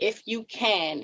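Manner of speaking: "if you can" repeated slow and weighted. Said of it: "And I stress the word".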